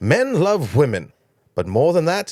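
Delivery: terrible put-on posh accent with big swooping pitch. Retelling what a driver's manager tells a woman checking out the car, terrible Lord Hesketh accent. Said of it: "it's a terrible accent".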